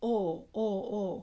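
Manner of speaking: Minnesota oh as one flat unmoving vowel. Showing learners central Minnesota's O without a glide: Minnesota monophthong O. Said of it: "Really just one sound".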